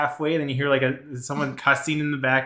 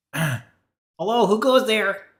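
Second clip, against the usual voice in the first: little gnome voice, high and slow, calling out; 8 semitones higher, 4 dB louder than usual. Voicing a little gnome guard calling down from the gates: gnome guard voice. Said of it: "little gnome has his hands over the side".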